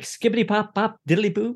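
very high-pitched fake French-sounding nonsense babble. Recalling how the group used to speak French: imitating fake French gibberish. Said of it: "our French was usually like".

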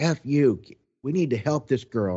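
sharp, heated yelling, flung back hard. Retelling how a woman started yelling at the speaker, imitating her yelling. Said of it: "she starts yelling at me".

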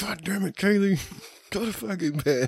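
angry outburst. Retelling own past words to a daughter: retelling an angry outburst. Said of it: "I was so pissed".

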